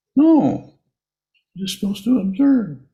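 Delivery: high-pitched squeaky voice. Imitating a meditation teacher answering a student: squeaky meditation teacher voice. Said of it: "in probably the same squeaky voice".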